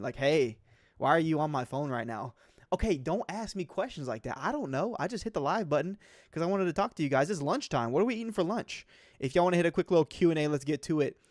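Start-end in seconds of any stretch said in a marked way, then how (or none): 0.2-2.3 put-on offended tone. Acting out a viewer's chat greeting: imitating an offended tone. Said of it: "as if he's, like, kind of offended".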